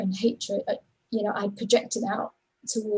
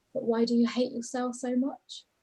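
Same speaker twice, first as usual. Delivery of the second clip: imitated quiet, low, soft voice; 3 semitones higher, 5 dB quieter than usual. Retelling what a man asked the speaker, retelling his quiet, low voice. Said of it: "in a really quiet, low voice".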